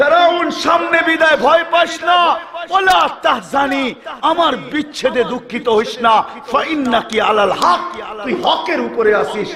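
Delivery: put-on high-pitched shouted small child voice.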